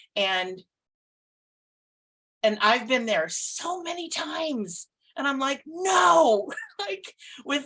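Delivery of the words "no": high, loud, defiant resistant tone. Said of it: "with all my resistance".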